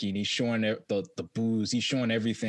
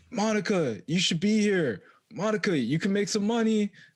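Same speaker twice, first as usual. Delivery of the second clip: pitched-up, hollering shout; 11 semitones higher than usual. Retelling a video shout-out to a woman named Monica, imitating Paul Pierce shouting. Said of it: "when he shouted out some".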